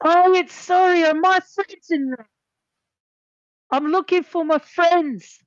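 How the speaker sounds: shrill, very high, loud yelling. Playing Sari in a role-play scene, yelling. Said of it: "Sari starts yelling at this point".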